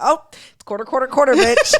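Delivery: high mock voice, ready-made and rote. Retelling own reaction on hearing the customer's voice: imitating own past reaction. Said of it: "I'd be like".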